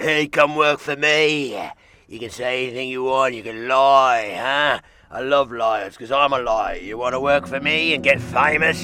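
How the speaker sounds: loud put-on Cockney accent. Play the devil offering someone work and fame, as the Devil with an unexpected accent. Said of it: "I was not aware the devil had that accent".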